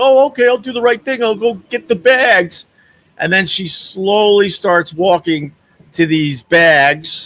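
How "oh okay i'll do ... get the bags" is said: mock vague, dopey, clueless going-along tone. Retelling how a woman answered people pointing at bags: imitating a clueless woman. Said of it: "And now she's looking clueless".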